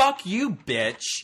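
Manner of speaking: very high, shrill, enraged scream. Recounting a furious man who followed a woman out the door, retelling a furious scream.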